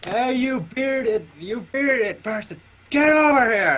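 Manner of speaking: loud, high-pitched yell in character voice. Calling Hephaestus over across a destroyed city: yelling in character. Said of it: "I'm just yelling at him".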